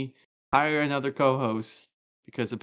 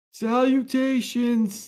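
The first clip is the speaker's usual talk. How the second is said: very high, loud put-on old man voice; 10 semitones higher, 5 dB louder than usual. Trying out a voice for today's script, put-on old man voice. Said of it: "maybe I could do his old man voice. ... No, that's my old man voice".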